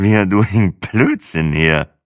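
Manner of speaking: put-on very slow, slurring speech like a drunk. On a men's night out, the narrator slurs into a woman's ear. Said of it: "lallte ich".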